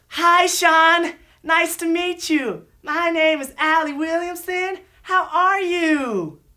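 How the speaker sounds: overly slow, loud talking, pitched very high. Narrator acting out how people talk when they first meet her: very slow and loud. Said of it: "they usually speak real slowly and real loudly".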